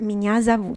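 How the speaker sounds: normal talking voice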